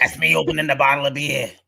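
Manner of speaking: put-on thick, strong Boston accent. Acting out an ASMR role play of a drunk aunt at Thanksgiving: put-on strong Boston accent. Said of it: "really strong, like, Bostonian accent".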